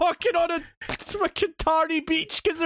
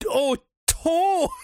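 mock, pained, groaning, wincing yelp. Describing what gets said after stubbing a toe, retelling a stubbed-toe cry. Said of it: "when I stub my toe, I go".

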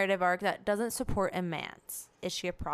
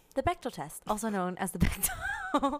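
smart-speaker assistant reading voice; 5 semitones higher than usual. Asked to explain something to the listeners, the speaker answers in an Alexa voice. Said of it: "that's my Alexa voice".

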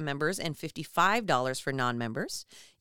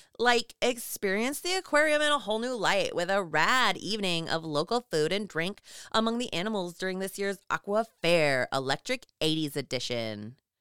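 put-on totally eighties Valley Girl voice; 2 semitones higher than usual. Reading an announcement aloud to a co-speaker, doing a Valley Girl voice. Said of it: "That was my best Valley Girl impression".

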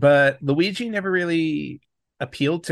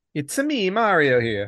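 milder Italian put-on accent. Opening a retro gaming podcast episode, a host introduces in a Mario voice. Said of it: "not as Italian voice".

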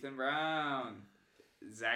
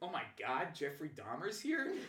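acted-out, confused-sounding delivery. Speaker retells a man screaming at him, retelling own confusion. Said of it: "I was so confused".

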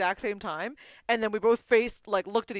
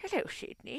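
whispered, creepy, breathy put-on voice; 4 semitones higher, 10 dB quieter than usual. Taking a turn saying a greeting in the creepiest voice: creepy put-on voice. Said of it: "in the creepiest voice? ... mine's this".

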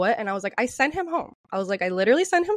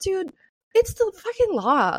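put-on fed-up, worn-out exasperation, pitched up; 8 semitones higher than usual. Recounting telling a man to leash his dog, retelling an exasperated line. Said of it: "this is how I said it too".

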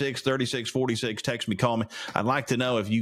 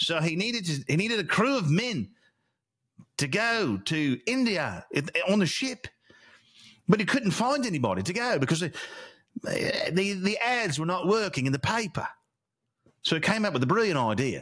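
put-on British accent; 6 semitones higher than usual. Storyteller narrating a tale while practicing a put-on British accent. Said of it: "I gotta work on my British".

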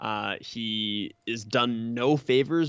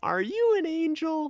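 very high, flat, just-reading-it-out delivery. Criticizing how he delivers a line of dialogue, imitating him just reading a line. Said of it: "He's always just kind of reading".

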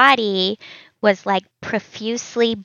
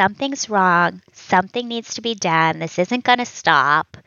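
ordinary talk

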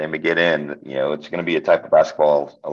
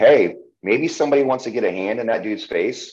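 put-on yelling, pitched up; 6 semitones higher than usual. Retelling watching a game on tv: imitating screaming at the tv. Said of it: "I'm screaming at the T V like".

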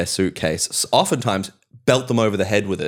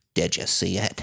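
breathy, whispered horror host narrator voice; 7 dB quieter than usual. Imitating a ghost video narrator as the scary music plays: imitating a ghost video narrator. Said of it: "He sounds like that".

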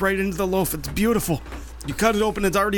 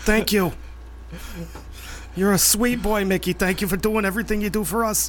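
put-on New York-accented speech. Speaking to mickey: new york accent. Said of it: "Wouldn't it be Irish accent, though?".

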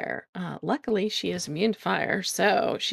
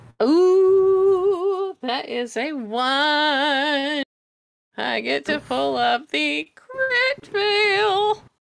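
happy, delighted, gleeful, loud, with a long drawn-out ooh; 8 semitones higher, 7 dB louder than usual. A player announces rolling a critical fail for their own character, gleeful. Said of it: "you sound so happy about doing that".

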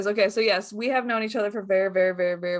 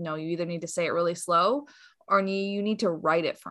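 ordinary talk

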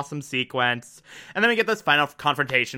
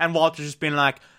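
usual speaking voice

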